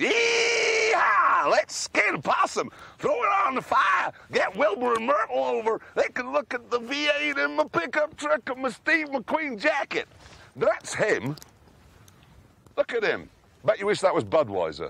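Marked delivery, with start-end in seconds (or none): 0.0-10.1 American cowboy voice, pitched way up. Showing another speaker the right way to impersonate a man, mock cowboy voice. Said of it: "me impersonating him is".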